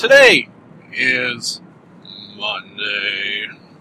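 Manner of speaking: "today is monday" stepping down. Announcing the day and date, with pitch stepping down each word. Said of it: "kind of bring it down with each word".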